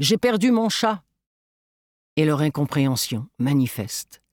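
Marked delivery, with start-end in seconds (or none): 0.0-1.0 high-pitched shouting out. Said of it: "je crie dans leur direction".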